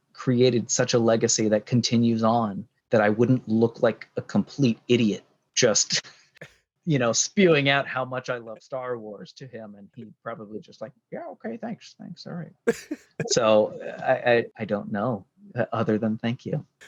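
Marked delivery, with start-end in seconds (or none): 11.1-12.8 soft, very high-pitched, offhand brush-off tone. Imagining the reply to a fan gushing about Star Wars, George Lucas impersonation. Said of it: "pretty damn good George Lucas impersonation".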